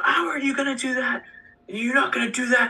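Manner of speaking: very high-pitched screaming. Retelling how another coach confronted the referee: imitating a coach screaming. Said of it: "The varsity coach screams at the".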